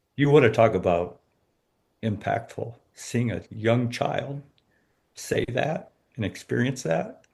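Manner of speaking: tearful, crying speech through tears. Reflecting on seeing a young child say those words, crying. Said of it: "Now you got me crying".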